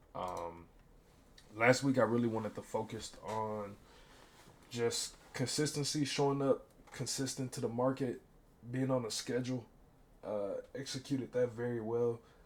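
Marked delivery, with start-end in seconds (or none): 10.8-12.2 talking through a yawn. Reviewing last week's goals, the speaker talks through a yawn. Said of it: "So sorry, I'm yawning".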